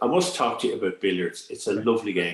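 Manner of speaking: ordinary talk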